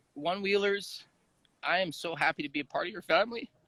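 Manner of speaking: soft, heartfelt voice, overcome with feeling. Asked for final words, a guest addresses the One Wheel community, emotional. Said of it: "Sorry that I'm so emotional".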